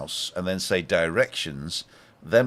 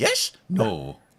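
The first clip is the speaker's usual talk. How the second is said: put-on Welsh speech; 3 semitones higher than usual. Mimicking how the welsh always answer: imitating the welsh. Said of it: "The Welsh always say".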